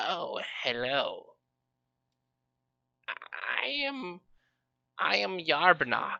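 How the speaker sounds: high-pitched, slow, swooping goblin voice. Narrating a pacing goblin as you step into the room, Yarbnock goblin voice. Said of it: "you see this goblin".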